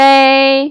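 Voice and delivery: may held high, flat and drawn out. A language teacher demonstrates a tone for learners to practise: high flat tone. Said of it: "Keep it flat and high".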